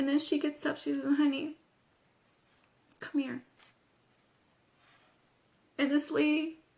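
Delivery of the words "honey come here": usual speaking voice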